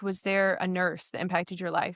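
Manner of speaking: usual speaking voice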